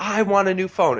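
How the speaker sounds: high, loud screaming. Telling about a customer in a Verizon store, imitating a woman screaming. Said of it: "she's like screaming".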